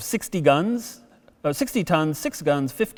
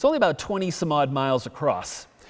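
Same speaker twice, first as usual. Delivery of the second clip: ordinary delivery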